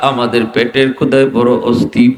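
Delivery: low, sobbing, pleading, weeping voice.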